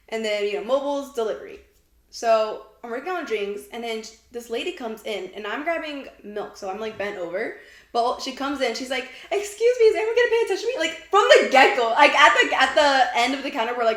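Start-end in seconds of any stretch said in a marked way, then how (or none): 9.3-10.7 put-on, very high, indignant, annoyed, put-out voice. Retelling what a customer said on walking in: imitating an angry customer. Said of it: "she was already mad".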